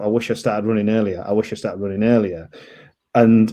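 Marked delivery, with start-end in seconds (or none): none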